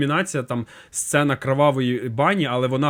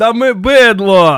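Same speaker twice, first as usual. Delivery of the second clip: very loud, high, full-throated shout; 7 semitones higher, 10 dB louder than usual. Recalling eating shawarma at the cinema, the speaker is retelling a shout from then. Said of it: "я ще тоді кричав".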